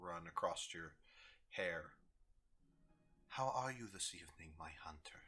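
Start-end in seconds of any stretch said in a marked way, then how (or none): 3.3-5.2 gentle, soft feminine whisper, close and intimate. As game narrator, voicing a woman who whispers to the player's character, in a soft feminine whisper. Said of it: "a soft feminine voice whispers in your ear".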